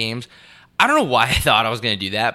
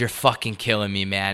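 put-on angry outburst. Retelling a frustrated customer's outburst in a store: imitating an angry customer. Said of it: "And he was so mad".

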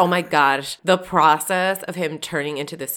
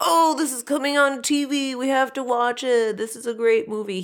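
put-on stoned surfer dude voice, pitched up; 9 semitones higher than usual. Retelling what Chris said about a movie on TV: imitating Chris as a stoned surfer. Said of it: "Why does he sound like a stoned surfer?".

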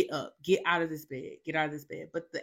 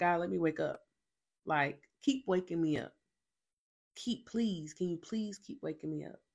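soft, hushed pleading, repeated over and over; 5 dB quieter than usual. Speaker recounts praying to God, retelling own begging. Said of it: "I was begging".

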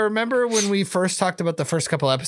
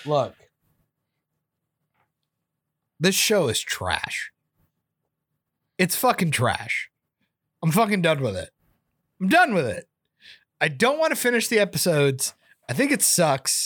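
heavy breathing from anger. Ranting to friends about a show, breathing heavily from anger. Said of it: "I'm breathing heavily because I'm angry".

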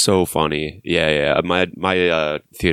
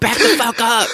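put-on screaming voice, higher and louder; 4 dB louder than usual. Retelling a film scene where the character screams at hippies: imitating Rick Dalton screaming. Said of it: "he's screaming at them".

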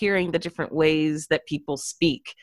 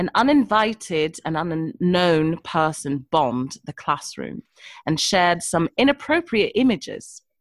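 put-on British accent. Asked to show it off, reading a school principal's email aloud in a fake British accent. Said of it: "I'm curious what your fake British accent sounds like".

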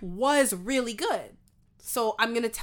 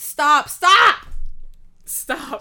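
very loud, high-pitched screaming; 5 semitones higher, 10 dB louder than usual. Screaming at the other speaker to stop looking at something: screaming. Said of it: "sorry for screaming".

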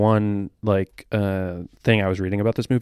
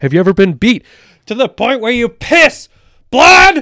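very high, very loud, shrill rising scream; 11 dB louder than usual. Retelling a movie line: screaming Nicolas Cage impression. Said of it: "screams it in his, like, Nick Cage".

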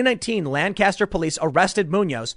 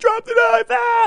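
put-on weepy crying, pitched very high, pleading; 3 dB louder than usual. Acting out a cop begging a knife-wielding man: imitating a crying cop.

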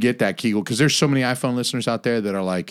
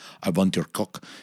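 put-on thick, heavy Russian accent, lower pitch; 3 semitones lower, 4 dB quieter than usual. Acting out an imagined Russian woman whispering in one's ear: thick Russian accent. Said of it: "this thick ass accent".

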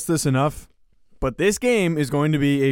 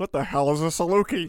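bewildered, baffled, clueless, dim-sounding voice; 4 dB quieter than usual. Retelling own earlier question about the mascot: imitating own clueless question. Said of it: "I sounded like an idiot when I went".

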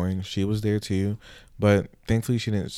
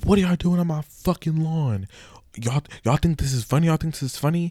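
high mock yelling and screaming; 8 semitones higher, 3 dB louder than usual. Retelling how a girl's dad came outside at them on his lawn: retelling a dad yelling, screaming. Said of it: "there's this grown big adult yelling and screaming at us".

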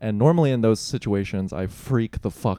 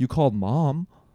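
play-acted hurt, upset, accusing tone; 4 semitones higher than usual. Retelling what dad said on the phone: imitating an upset dad. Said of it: "he was so upset".

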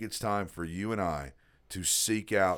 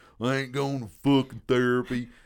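put-on rural American accent; 3 semitones higher, 3 dB louder than usual. Describing men who refuse therapy, quoting them in a redneck accent. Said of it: "I hate to throw on that redneck accent".

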